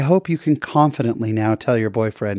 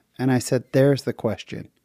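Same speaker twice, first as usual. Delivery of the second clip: ordinary talk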